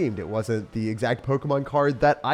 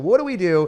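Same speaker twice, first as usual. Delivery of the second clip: mock panicky, freaking-out panicked tone; 5 semitones higher than usual. Retelling a call to eBay about a lost card: imitating own past panic. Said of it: "So I'm freaking out".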